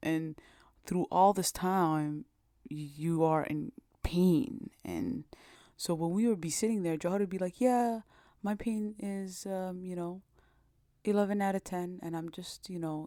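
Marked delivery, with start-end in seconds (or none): 7.6-13.1 mock utterly composed, matter-of-fact, very calm even tone. Retelling how Jawahar described her pain: very calm tone imitating Jawahar. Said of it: "she's saying it in the most calmest tone".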